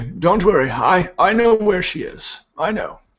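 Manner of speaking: high, reassuring priest voice. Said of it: "Odaris, the priest, would say".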